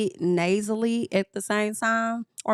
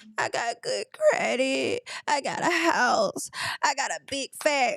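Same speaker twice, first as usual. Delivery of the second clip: crackly put-on voice, higher pitch; 4 semitones higher than usual. Retelling how she sounded last night: crackling Evelyn Lozada voice. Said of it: "like Evelyn Lozada".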